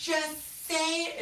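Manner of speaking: high, slow mock yelling like a kid.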